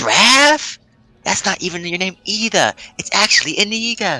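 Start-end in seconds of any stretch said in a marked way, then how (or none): 3.0-4.2 hushed whisper, higher pitch. A character corrects someone's name, whispering. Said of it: "I'm like whispering this".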